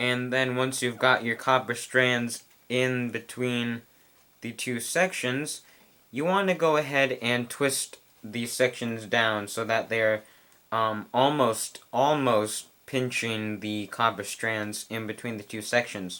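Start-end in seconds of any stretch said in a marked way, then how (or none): 11.1-12.7 almost stressed and stretched slowly. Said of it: "I stress the word almost".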